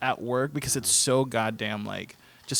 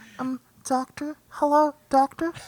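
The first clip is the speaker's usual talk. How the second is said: creepy, eerie, very high put-on voice. An ICU worker demonstrates the voice used on doctors during rounds: creepy voice. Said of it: "that's really creepy".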